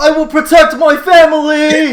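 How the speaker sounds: put-on child's voice, very high, very loud, slow, drawn-out, earnest. Voicing a kid who answers the trainer: kid shouting a vow. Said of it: "the kid on the side says".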